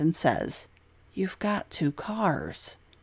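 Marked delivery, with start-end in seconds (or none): 1.1-2.7 slow, drawn-out, disgusted sigh. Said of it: "sounds so disgusted as he sighs".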